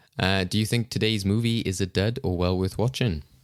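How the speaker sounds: ordinary talk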